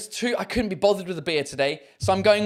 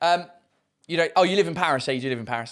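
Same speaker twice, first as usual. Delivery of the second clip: ordinary delivery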